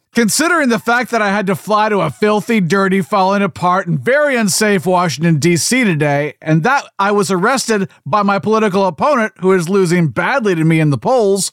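normal talking voice

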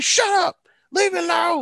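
very high, loud mock yell.

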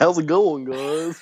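put-on thick country accent. Recalling how Bull Buchanan says it, doing his Bull Buchanan country voice. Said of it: "He's got the most country voice".

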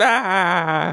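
put-on villain cry. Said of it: "It's like, instead of lightning".

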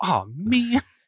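very high, squeaky cartoon groan. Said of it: "sounded like Swiper for a minute".

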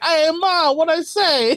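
very high, over-the-top, exaggerated Italian American accent. Imitating how he talks with his two Italian parents, put-on Italian American accent. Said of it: "and then he's just going like".

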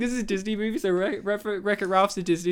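ordinary delivery

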